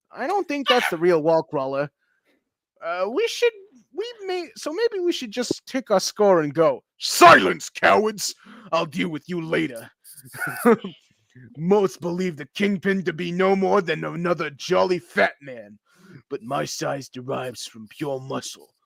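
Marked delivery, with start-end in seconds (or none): 7.0-18.7 put-on New York mob boss voice. Voicing the villain as he silences the cowards, New York mob boss Kingpin voice. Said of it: "New Yorker mob boss Kingpin".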